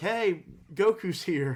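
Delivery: high, imitated yelling. Retelling a cartoon scene, imitating the turtle yelling. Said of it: "the turtle has to yell".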